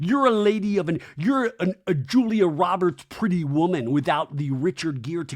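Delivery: normal talking voice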